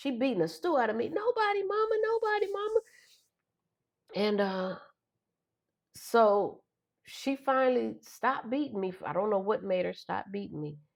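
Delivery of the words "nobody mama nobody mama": very high, pleading screaming cry. Retelling answering Mama while being beaten: imitating own past screaming. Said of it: "I'm just screaming".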